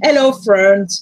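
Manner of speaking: put-on deep, loud American accent. Asked how Americans talk, repeating a greeting to friends: doing an American accent. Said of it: "if I want to do the Americans".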